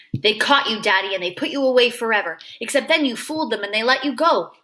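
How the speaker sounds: ordinary delivery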